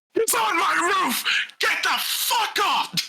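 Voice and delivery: put-on shrieking, furious old elf voice, very high, angry. Voicing an older elven man shouting at the listeners, angry shouting. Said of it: "older elven man shouting at you".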